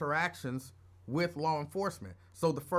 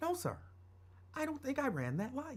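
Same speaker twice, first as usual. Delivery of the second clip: polite, high, soft voice with no bass. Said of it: "I wasn't putting no bass in my voice".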